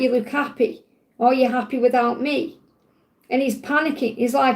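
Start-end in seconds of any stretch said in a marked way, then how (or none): none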